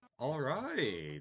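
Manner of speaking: voice breaking slightly, small crack. Starting a recording before greeting everyone, slight voice crack. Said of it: "that was a slight voice crack".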